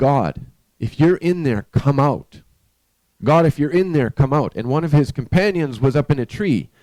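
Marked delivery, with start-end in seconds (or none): 0.0-4.5 mild, light, called-out shout. Telling a story about a man who dug a hole, imitating someone shouting. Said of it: "He's shouting".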